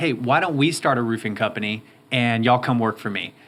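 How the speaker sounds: ordinary delivery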